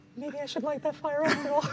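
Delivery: very high, hushed half-whisper under the breath. Voicing a character in a game scene: half-whispering under breath. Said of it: "whisper in his breath".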